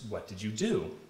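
pitch goes up on do. Showing a cue that someone is asking a question: rising pitch at the end. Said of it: "It's the rising pitch, or this blue line in my spectrogram, that's at the end of my sentence".

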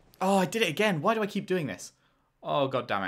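flustered, frantic, panicked outburst. A streamer keeps repeating a mistake in a game, panicking. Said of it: "I'm just panicking".

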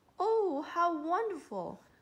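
high, delighted exclaiming cry. On hearing the king allow dancing for one night, crying out.

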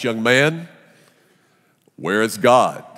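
heavy, deepest, most intimidating pastor voice. Telling a story, quoting a pastor questioning an eight-year-old boy: mock-intimidating deep voice. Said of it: "the pastor says in his deepest, most intimidating voice".

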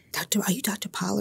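hushed whisper. Dr. pollard retells a student walking up on campus and asking: whispering. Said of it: "And he's whispering".

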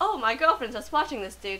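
ordinary talk

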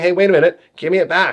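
put-on puppy voice. Showing what the puppy would say when food is pulled away: voicing the puppy. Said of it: "you can see this puppy saying".

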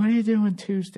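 sultry, seductive, sexy voice. Retelling how a partner asked about plans: imitating Nia's sexy voice. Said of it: "The sexy voice".

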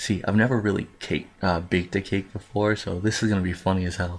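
talking kind of quiet. Baking a cake while everyone in the house sleeps, talking kind of quiet. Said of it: "I'm sorry I'm talking kind of quiet".

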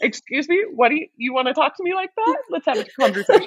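high, quick, laughing scolding mom voice.

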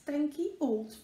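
plain

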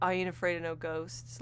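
flat, expressionless deadpan, no expression. Imagining how someone would deliver a Ghostbusters homage line, with no expression. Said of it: "with no expression and no real delivery".

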